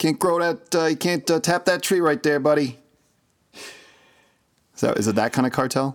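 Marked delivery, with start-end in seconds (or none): 0.0-2.8 put-on Jersey accent, much higher. Joking about a maple syrup cartel, in a Joey Maple Drips Jersey accent. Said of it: "they're probably not going to sound like they're from Jersey".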